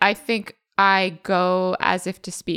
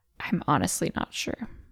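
very soft, very quiet whisper; 3 semitones lower, 6 dB quieter than usual. Retelling glancing up from wrapping and answering the question, very quiet. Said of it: "very quietly say".

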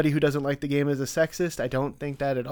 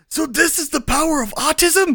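very high, loud, squeaky put-on anime character voice; 13 semitones higher, 6 dB louder than usual. During a chat about state quarters, trying a put-on anime voice. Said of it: "I'm going to do my best anime voice".

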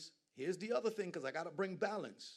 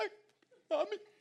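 very high, loud sob-talking, words blubbered through sobs; 5 dB louder than usual. Addressing Caribbean people in the crowd, acting out a crying kid, imitating sob-talking. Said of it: "you gotta talk while doing it".

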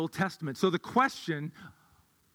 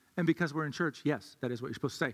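ordinary talk

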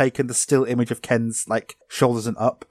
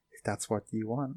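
hushed, very soft, quiet, eerie, creepy delivery; 13 dB quieter than usual. Describing how Ken talks when asked into the game: imitating Ken's quiet creepy voice. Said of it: "The way he talks is like".

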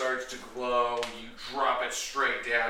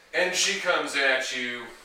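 ordinary delivery

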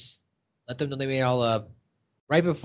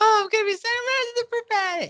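put-on excited kid voice, higher pitch. Retelling a scene where a boy is happy to be sacrificed: imitating Butters sounding excited. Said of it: "He's all excited".

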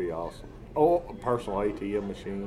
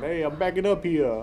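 high-pitched New Jersey accent; 6 semitones higher, 4 dB louder than usual. Imagining a truck's backup buzzer replaced by a voice with a New Jersey accent. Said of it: "like a New Jersey voice coming out saying".

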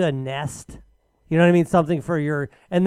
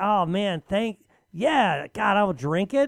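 put-on awkward voice, higher pitch; 3 semitones higher, 3 dB quieter than usual. Imitating someone opening a gift: Ryan's awkward insincere thanks. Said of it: "if I tried to do an impersonation of how bad it is".

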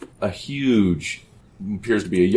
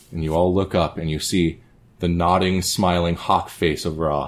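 usual speaking voice

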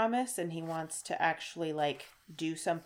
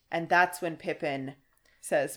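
plain

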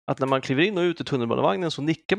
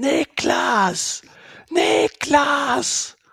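mimicked scream at a much higher pitch; 11 semitones higher, 5 dB louder than usual. Telling how someone screamed a name in the night, retelling a scream. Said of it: "någon som skrek".

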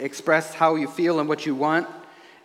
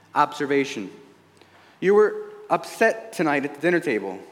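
usual speaking voice

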